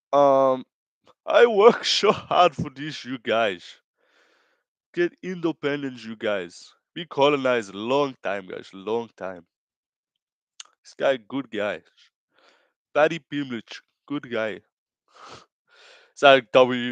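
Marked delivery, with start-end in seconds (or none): 1.2-14.6 put-on English spoken with a Brazilian Portuguese accent. Addressing you guys before asking how the accent is, do a Pantoja impression with a Brazilian Portuguese accent. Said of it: "how's my Brazilian Portuguese English accent".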